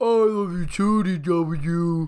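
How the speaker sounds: very slow, dopey, silly, stupid-sounding voice. Retelling a story where Arthur tells DW he loves her: silly, stupid Arthur voice. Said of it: "gives him like this really like silly, stupid voice".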